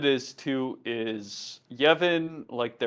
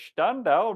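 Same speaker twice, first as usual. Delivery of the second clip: put-on German accent, higher pitch; 7 semitones higher than usual. Riku orders the guards: German accent. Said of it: "like a German accent here".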